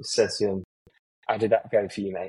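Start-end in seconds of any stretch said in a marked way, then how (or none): 1.3-2.3 put-on deadpan delivery. Retelling a reply about copying tactics: imitating Ange's deadpan.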